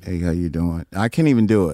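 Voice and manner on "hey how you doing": low, one-note monotone kept dead level. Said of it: "It was one note".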